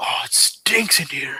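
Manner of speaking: whispering loudly. Narrating a game scene and voicing a character's remark, loud whisper. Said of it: "he's whispering very loudly".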